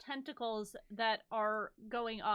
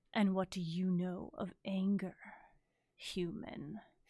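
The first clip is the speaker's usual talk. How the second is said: deep, bone-rattling creature voice; 3 semitones lower than usual. Narrating a creature that speaks to a player: deep bone-rattling voice. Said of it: "this deep, sort of almost bone rattling voice".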